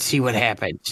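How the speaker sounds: hushed whisper. In character, whispering to whoever stands closest to the group. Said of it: "And then I'll whisper whoever's standing closer".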